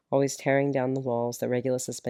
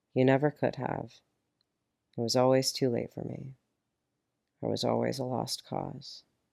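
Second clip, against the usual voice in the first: ordinary delivery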